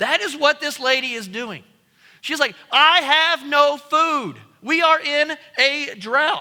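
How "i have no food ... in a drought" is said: loud, furious shout, very drawn out. Acting out what a lady in the story says, retelling a yell. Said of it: "I imagine she is yelling at this point".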